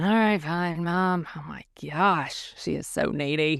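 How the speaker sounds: mock sarcastic muttering under breath. Imitating children muttering sarcastic comments about mom under their breath: imitating sarcastic muttering under breath. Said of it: "sarcastic comments about me under their breath".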